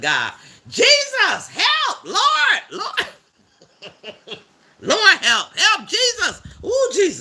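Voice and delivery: very slow, very high, drawn-out yelling. Acting out what one would have yelled after a bad cut: mock yelling for help. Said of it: "I would have been yelling".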